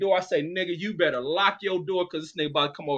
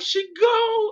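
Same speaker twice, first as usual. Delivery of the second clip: mock screamed wail, very high and loud; 5 dB louder than usual. Retelling how a crying friend screamed the news: imitating someone screaming. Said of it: "when he's screaming and shit".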